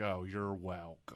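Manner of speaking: drawn-out put-on condescending tone. Retell how she answered your thanks for watching the kid, imitating a dragged-out, almost condescending reply. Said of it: "Drags it on".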